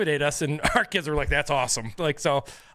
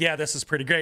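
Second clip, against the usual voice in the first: put-on speech through laughter. Retelling his own reply to the players: imitating his own laughing reply.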